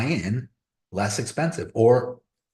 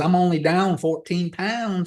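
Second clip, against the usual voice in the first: put-on country bumpkin Georgia accent; 7 semitones higher than usual. Retelling to a friend what a woman from the mountains said about her weight loss, in a country bumpkin accent. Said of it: "She's got a country bumpkin accent".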